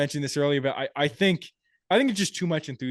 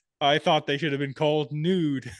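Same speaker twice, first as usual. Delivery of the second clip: plain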